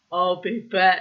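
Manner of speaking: very loud, booming movie-cyborg voice. Retelling what an ex-lover's ghost muttered: muttering like the Terminator. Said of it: "like the Terminator".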